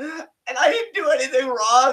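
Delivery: play-acted high whimpering whine, near tears. Mocking a wrestler by speaking as Charlotte: mock near-tears whine. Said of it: "talk with an inflection that makes me seem like I'm right near tears".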